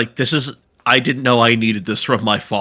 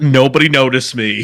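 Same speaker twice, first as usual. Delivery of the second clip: normal talking voice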